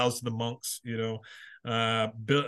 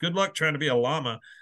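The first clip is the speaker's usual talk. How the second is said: ordinary talk, nothing marked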